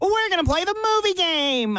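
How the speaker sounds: very high, jeering put-on talk-show voice. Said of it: "the voice that Conan O'Brien does when he's mocking somebody".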